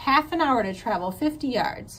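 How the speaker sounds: ordinary delivery, nothing marked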